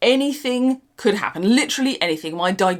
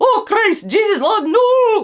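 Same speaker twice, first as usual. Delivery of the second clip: high, yelled, very bad fake Scottish brogue; 13 semitones higher, 6 dB louder than usual. Retelling reacting each time someone said woodwood instead of wormwood, shouting in a very bad Scottish accent. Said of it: "in a very bad Scottish accent".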